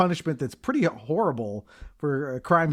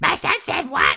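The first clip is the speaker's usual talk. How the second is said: very high, loud cartoonish mom voice; 13 semitones higher, 6 dB louder than usual. Retelling how a mom on the phone sounds: cartoon voice of a mom on the phone. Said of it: "cartoon, like".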